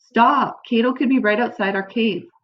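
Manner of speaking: usual speaking voice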